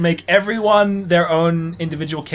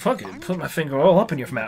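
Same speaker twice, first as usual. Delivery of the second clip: ordinary talk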